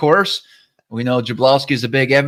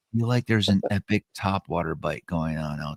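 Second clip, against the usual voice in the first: hushed whisper, lower and quieter; 7 semitones lower, 10 dB quieter than usual. Confiding a hunch while keeping it from one listener: whispering. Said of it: "so I'm gonna whisper".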